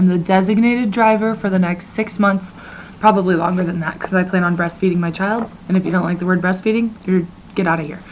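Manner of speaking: ordinary talk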